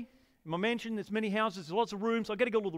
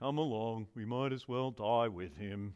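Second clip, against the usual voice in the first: very low, soft donkey voice; 11 semitones lower, 7 dB quieter than usual. Quoting a disciple's reply from a Bible story, in an Eeyore voice. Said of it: "That's my Eeyore voice".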